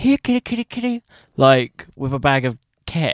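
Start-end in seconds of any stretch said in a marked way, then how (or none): 0.0-1.0 very high, enticing, coaxing call-out voice. Imagining the man luring someone with a bag of ket: imitating the man luring someone. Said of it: "I'm just imagining him, like, saying".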